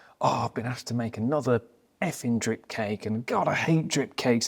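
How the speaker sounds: acted-out whingeing, fed-up, grumbling moan. Retelling a drip cake maker's video: imitating a cake maker moaning. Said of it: "it's him moaning".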